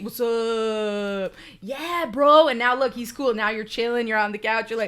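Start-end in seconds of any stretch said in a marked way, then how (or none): 0.0-2.5 put-on loud, very slow, drawn-out frat boy drawl. Answering what the dog would sound like: frat boy voice. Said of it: "As soon as you fed him a treat".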